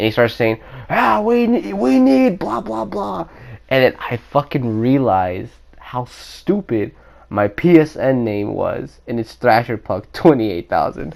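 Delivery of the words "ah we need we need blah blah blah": booming, very high, shrill, rough-edged voice. Retelling a guy who finally comes out and starts talking, imitating his loud voice. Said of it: "comes out with a fucking loud ass voice".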